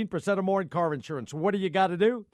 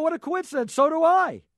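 very high, mock-impressed, sarcastic ribbing; 9 semitones higher, 4 dB louder than usual. Retelling how he teased a man who said he plays in the NFL, retelling a teasing remark. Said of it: "I'm busting his chops".

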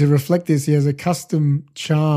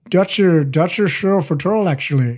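put-on Dutch accent held throughout; 2 semitones higher than usual. Chatting about a Dutch stuntman, trying out a Dutch accent. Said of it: "That's my Dutch accent".

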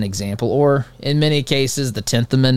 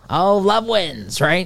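acted, high-pitched, scornful, derisive parroting tone; 7 semitones higher than usual. A speaker mocks people who use a phrase as a virtue signal, mocking imitation. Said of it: "So I'm mocking the folks".

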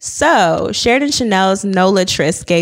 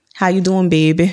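put-on New Orleans accent. Describing the vibe New Orleans men give off, imitating them in a New Orleans accent. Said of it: "I love a good New Orleans accent".

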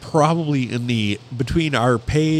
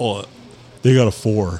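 ordinary talk, nothing marked

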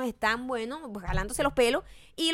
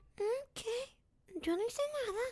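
very quiet, tiny hushed voice, playing dumb; 11 semitones higher, 10 dB quieter than usual. Comparing two celebrities, imitating Kim Kardashian: dumb little voice. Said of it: "con una vocecita de huevona".

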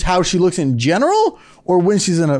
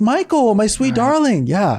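calm, serene, zen grandmother voice; 4 semitones higher than usual. Imitating a relaxed grandma talking about her will: imitating a calm zen grandma. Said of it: "She's all zen".

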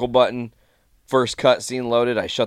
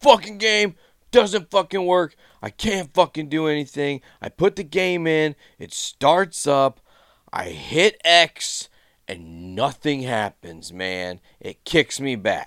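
mock angry irate ranting, pitched up; 5 semitones higher than usual. Retelling an angry customer at a game store counter: imitating a customer screaming angrily. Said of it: "He's screaming at Sarah".

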